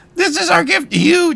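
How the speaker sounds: very high, shrill, yelled-out cry. Voicing a character offering a gift to a crowd: yelling out. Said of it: "as he's yelling out".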